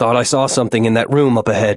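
ordinary delivery

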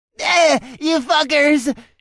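piercing, very high, shrill, loud scream of pain. Narrator reading the injured goblin's line as the narrator and Morella approach: screaming. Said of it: "He screamed".

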